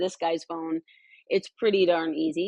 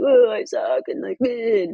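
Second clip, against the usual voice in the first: put-on mopey, dejected self-pity, high and loud; 5 semitones higher, 5 dB louder than usual. Describing how they act around the other coaches when hard on themselves: acting out being mopey. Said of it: "really mopey".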